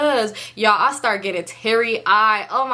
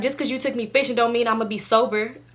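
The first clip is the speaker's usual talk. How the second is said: ordinary talk, nothing marked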